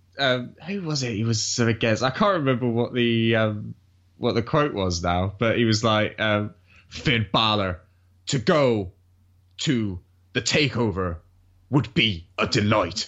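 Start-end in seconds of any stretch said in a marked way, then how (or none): 6.9-13.1 slow delivery with a breath between every word. Recalling a wrestler's promo line: Finn Balor impression, slow breaths. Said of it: "you always did the best Finn impression of just, like, his slow breath".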